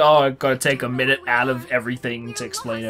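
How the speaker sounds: usual speaking voice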